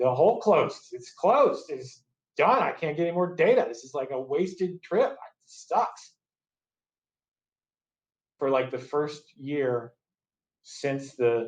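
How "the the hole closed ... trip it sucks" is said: clearly upset, high-pitched outpouring, acted out. Retelling what a drunk, upset teammate said: imitating upset Tad. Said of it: "but he's clearly upset".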